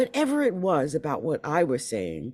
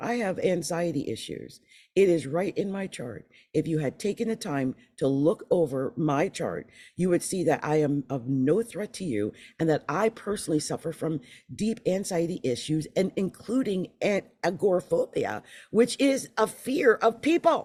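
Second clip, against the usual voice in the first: ordinary talk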